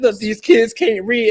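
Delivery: put-on very high, loud, tearful sobbing cry. Retelling a viral video of a man crying about students: imitating a man crying. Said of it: "The man was crying".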